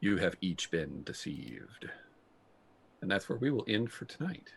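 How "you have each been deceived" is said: echo-like, reverberating delivery. Storyteller voicing a voice the players hear in their heads, in an echoing voice. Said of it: "in a kind of an echoing voice".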